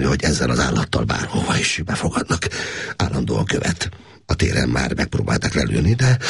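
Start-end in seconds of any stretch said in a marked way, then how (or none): none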